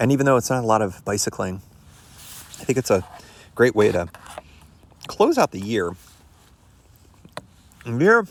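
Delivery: speaking with full mouth. Wrapping up the year on an overnight trip, talking while eating. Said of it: "pardon me as I'm eating here".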